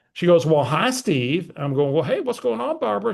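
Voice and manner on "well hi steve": put-on woman's voice. Retelling a birthday phone call, voicing the caller's greeting: imitating Barbara's voice. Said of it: "I got to use Barbara's voice for effect".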